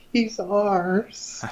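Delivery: high tender voice.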